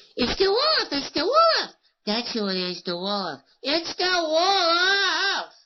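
very high, swooping cartoon lamb voice, wolf stretched out. Voice actor demonstrating his cartoon characters, doing Lambsy's line: Lambsy voice. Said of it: "Lamsey is similar, but he's a different character. He says".

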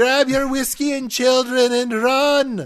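very high, loud, panicked mock Irish accent yell.

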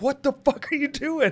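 sudden shocked exclamation, high. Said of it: "And I was like".

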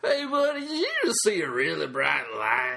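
homeless man voice. Comedian throwing in a bonus bit for Jim: homeless guy voice. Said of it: "homeless guy who gets his pants on".

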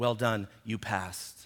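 hushed, very quiet, slow, deliberate words. Retelling what the waitress said when bringing the check, imitating someone speaking quietly. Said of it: "she said to me very quietly".

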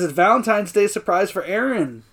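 ordinary talk

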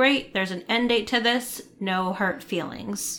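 ordinary talk

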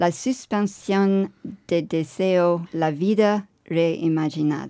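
slow Spanish spoken with a French accent. Reading an exhibition title aloud, trying Spanish: Spanish with a French accent. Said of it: "let's try my Spanish".

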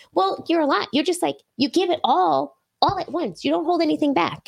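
tiny, high, squeaky little cartoon mouse voice. Retelling what a friend told her at dinner, in a Minnie Mouse voice. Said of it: "she sounds like Minnie Mouse".

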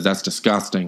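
ordinary talk

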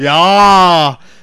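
loud, belted, grunting impression voice.

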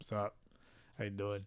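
very quiet, low, flat, level monotone. Describing own off-mic manner, greeting someone in a flat monotone. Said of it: "like I'm pretty monotone. I'm just like".

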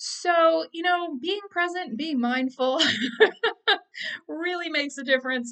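high, loud, self-mocking laughing aside. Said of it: "So I'm laughing about that".

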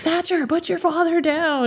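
shouting. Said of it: "I'm like".

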